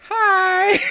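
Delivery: put-on almost Valley Girl accent, high and loud.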